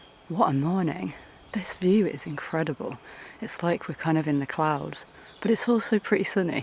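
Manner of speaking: hushed, quiet whisper. Early in the morning, talking to viewers while whispering. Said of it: "I'm whispering because it's quite early".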